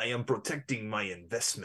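soft put-on voice. Retelling a movie scene, the speaker quotes Saito in Mombasa: Saito voice. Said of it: "Why do you keep doing the voice?".

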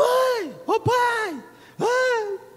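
very high, very slow, drawn-out frightened cry. Retelling waking from a nightmare at night: imitating a frightened yell for parents. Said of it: "Eu sempre gritava".

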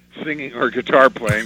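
plain

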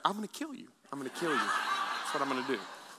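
low, hushed, secretive whisper. Speaker acts out a woman whispering to them, retelling a whisper. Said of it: "she's whispering because she don't want them to know".

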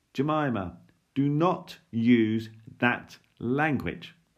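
very loud, booming voice, slow and drawn out. Reading a story where Dad calls up the stairs: booming voice. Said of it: "Dad's voice immediately came booming up the stairs".

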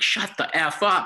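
very high, shrill, very slow, drawn-out yell. Recalling snapping at noisy kids during the national anthem, retelling a yell. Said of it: "And I just yelled".

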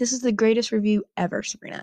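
ordinary talk, nothing marked

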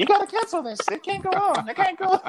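shrieked high with big swings in pitch.

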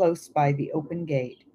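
plain

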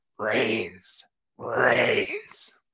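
low, swooping, raw, retching ghoul voice. Reading a story, the tar-covered skeleton from the tank speaks: raw, vomitous voice. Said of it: "It speaks in a raw, vomitous voice".

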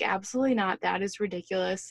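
ordinary talk

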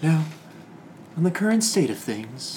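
whispery public-radio announcer voice. Told the group sounds like NPR, a speaker whispers softly in an NPR voice. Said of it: "You sound like you're on NPR".

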